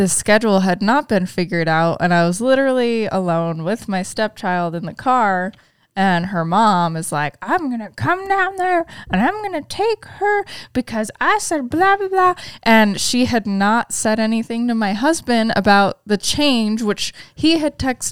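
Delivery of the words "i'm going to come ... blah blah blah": very high, goofy, silly put-on caricature voice. Retelling what her stepchild's mom said to her: voice like Herbert the pervert. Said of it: "Why does she sound like Herbert the pervert?".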